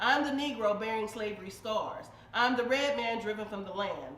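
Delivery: plain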